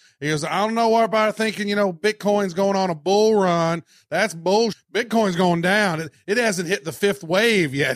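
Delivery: mock North Carolina drawl. Quoting a man whose episodes you've been watching, in his southern drawl. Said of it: "He's got this kind of a southern drawl".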